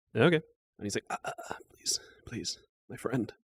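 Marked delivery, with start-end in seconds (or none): 1.1-3.3 fearful and cowering, quieter. Voicing the cowering character with a rapier at his throat: cowering. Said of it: "he's kind of cowering a little".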